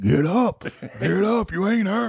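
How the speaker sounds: mock coach voice, high, drawn-out screaming. Retelling how Bodine yelled at injured players on the field, retelling Bodine screaming. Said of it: "he's screaming at you".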